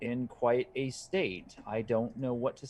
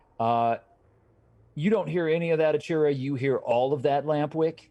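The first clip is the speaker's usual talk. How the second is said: plain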